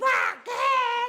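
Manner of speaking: put-on child voice, crying out.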